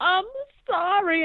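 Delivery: very high, acted weeping through the words. Retelling a show scene where a clown hides crying in a closet: imitating Sad Sam crying.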